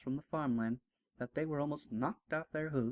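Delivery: plain reading voice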